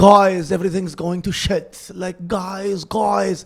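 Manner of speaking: put-on Iranian accent, emotional, calling out. Speaker imitating emotional Iranian friends, Iranian accent impression. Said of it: "Good, good accent".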